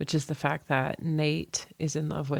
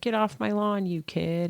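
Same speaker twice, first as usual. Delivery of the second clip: high, mild put-on yell; 5 semitones higher than usual. Retelling a film scene where a bandmate yells at him: imitating Dickie yelling. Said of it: "and yells at him".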